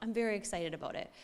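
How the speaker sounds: ordinary talk, nothing marked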